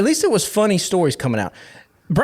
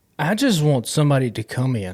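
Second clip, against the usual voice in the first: defeated, dejected, resigned tone; 3 semitones lower than usual. A fan talks about the team's search for a new head coach: defeated. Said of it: "you sound so defeated".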